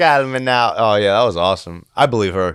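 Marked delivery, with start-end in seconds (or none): 0.0-0.7 fake, put-on Jamaican accent. Quoting a psychic hotline line: Miss Cleo's fake Jamaican accent. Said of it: "with a fake Jamaican accent".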